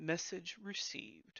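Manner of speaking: haughty, snooty, hushed whisper in a bardic voice. Voicing a bird answering after its squawk, in a snooty bardic voice. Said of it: "the bird it kind of says in a snooty voice".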